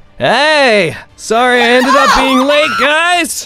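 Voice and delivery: very loud, high, shrill, echoing, drawn-out "hey". A narrator voices a newcomer calling out across the area, very loud shout. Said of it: "you just hear echoing across the area very loud".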